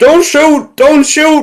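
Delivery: put-on high, loud shout in Cockney accent.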